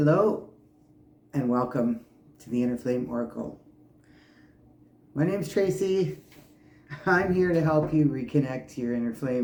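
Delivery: words broken up by laughter throughout. Host welcomes listeners to the show, laughing while talking. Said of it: "I'm sorry I'm laughing".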